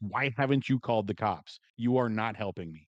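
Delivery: irate, pissed-off, demanding, accusing voice. Retelling a wife sitting up in bed talking in her sleep, mock pissed-off. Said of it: "she's like pissed off in that voice".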